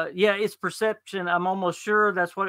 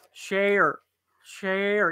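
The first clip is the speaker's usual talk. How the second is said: rural country-sounding speech. Showing how to say the town name Sherwood: saying it like a country person. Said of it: "You gotta say it like a country person".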